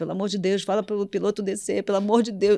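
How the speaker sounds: put-on crying, tearful, pleading voice. Recalling a breakdown on a plane, begging the flight attendant, retelling own tearful plea. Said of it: "chorando, pedindo para a aeromoça".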